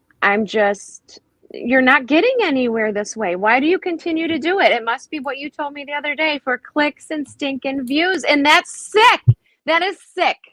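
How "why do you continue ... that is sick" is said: angry, impassioned, worked-up tirade. Complaining about people who do it for clicks and views: yelling. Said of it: "I'm sorry I'm yelling about it".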